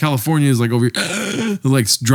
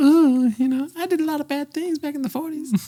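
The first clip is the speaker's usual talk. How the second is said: very high-pitched Southern belle voice; 14 semitones higher, 4 dB quieter than usual. Imagining a figure talking like a Southern belle: Hitler as a Southern belle. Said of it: "Imagine fucking Hitler as, like, a Southern belle".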